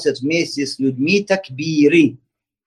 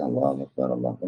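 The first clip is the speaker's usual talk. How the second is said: timid, bashful murmur under the breath; 9 dB quieter than usual. Showing how people shyly say the takbir nowadays: imitating a shy, quiet takbir. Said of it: "Тихонечко, как сейчас люди стесняются".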